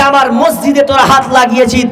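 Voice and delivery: ordinary talk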